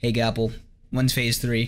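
plain

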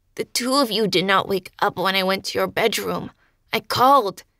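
snarling delivery. He speaks the words straight into the narrator's mind, snarling. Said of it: "He snarled the words in my mind as he opened his jaw by increments, ... licking his mouth with an odd quirk to his muzzle".

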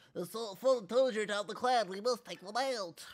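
geeky, dorky put-on nerd voice. Voicing a game character while playing, in a nerd voice. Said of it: "That was like a nerd voice".

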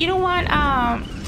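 very high, squeaky put-on voice.

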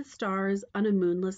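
ordinary delivery

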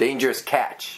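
ordinary talk, nothing marked

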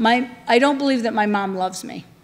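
normal talking voice

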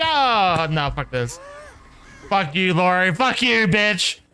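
slow, irritated tone, rising and building in annoyance. Streamer cursing at a teammate during a game, annoyed cursing. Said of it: "I'm fucking annoyed".

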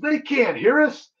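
put-on, high, full-throated top-of-the-lungs shout. Retelling a fishing trip, quoting own reply to a companion: imitating own yell at top of lungs. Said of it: "I yell at the top of my lungs".

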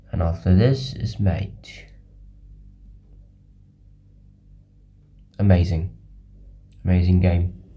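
sleepy, drained, lifeless, low-energy voice. Recording a chess video at 3 a.m., the speaker wraps up the game sounding dead tired. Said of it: "Sorry if I sound very dead in this video".

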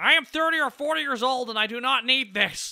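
loud high obnoxious cartoon voice. Talking about ideas for upcoming projects, doing an obnoxious Master Shake impression. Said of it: "trying to sound like someone who's a little bit obnoxious".

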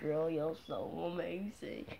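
very quiet, slow, barely audible cartoon-voice murmur. Imitating a cartoon character's line: Cyborg voice. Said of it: "You know that thing off of Cyborg".

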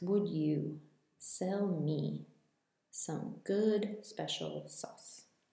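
slow, sound-by-sound phonetic reading. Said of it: "here it is in phonetics".

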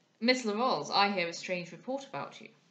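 plain reading voice

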